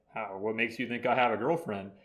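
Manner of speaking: usual speaking voice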